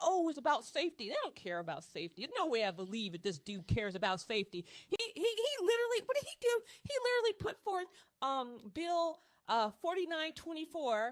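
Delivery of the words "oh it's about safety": sarcastic, mocking put-on voice, mock-sincere. Speaker complaining about roadies acts out their excuse, in a mocking imitation of roadies. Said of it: "and they're like".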